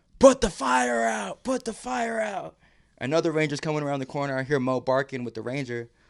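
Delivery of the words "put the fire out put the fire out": very high, very slow, drawn-out rasping scream. Retelling a rescue, imitating a ranger's screaming: retelling a ranger's screaming. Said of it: "a ranger starts screaming at him".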